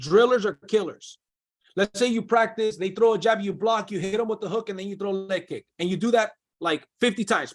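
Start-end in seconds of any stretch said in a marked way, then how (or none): none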